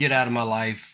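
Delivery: normal talking voice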